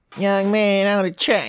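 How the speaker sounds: put-on squeaky, high little child's voice. Imitating a producer tag from an album: imitating a squeaky kid voice. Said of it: "like a squeaky kid voice".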